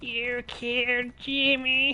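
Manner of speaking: very high-pitched goblin creature voice. Admitting to being bad at voices, trying out a goblin voice. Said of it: "I can maybe do a goblin voice".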